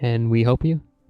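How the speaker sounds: very quiet, hushed voice. Speaking in character to a stranger: speaking very quietly. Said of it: "very, very quietly".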